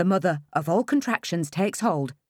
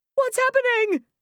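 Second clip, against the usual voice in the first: strange, very high, shrill shriek; 4 dB louder than usual. A woman in labour, gripped by pain, calls out to those around her, shrill. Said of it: "I shrill, my voice not sounding like my own".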